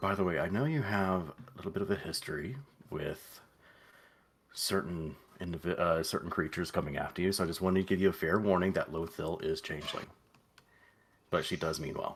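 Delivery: soft, quiet, confidential aside. Playing a character warning another character privately: said quietly. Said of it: "he just says quietly to her".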